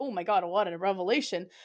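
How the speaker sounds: ordinary talk, nothing marked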